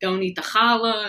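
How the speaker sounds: loud yelling. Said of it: "yelling at my daughter".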